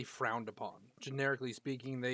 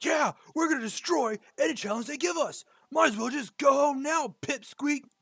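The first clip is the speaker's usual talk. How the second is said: very high, shrill, very loud, hostile, angry jeer; 14 semitones higher, 10 dB louder than usual. In a narrated scene, the younger of two brothers pipes in; angry younger brother. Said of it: "the younger, more angry one pipes in".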